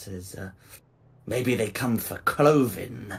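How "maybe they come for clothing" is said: rough-edged, gruff speaker. Voicing a wolf-snouted hooded figure: gruff voice. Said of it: "To which the gruff voice".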